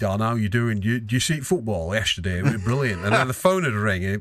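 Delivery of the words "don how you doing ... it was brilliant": put-on Bolton accent. Retelling how Dave greeted Don in the morning, imitating Dave's strong Bolton accent. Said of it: "He had the strongest Bolton accent".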